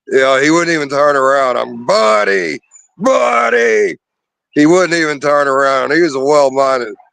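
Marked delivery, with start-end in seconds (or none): 1.5-3.9 high, raspy, rough, stretched-out screaming. Recalling screaming at buddy, who wouldn't turn around, retelling a scream. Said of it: "started screaming at Buddy".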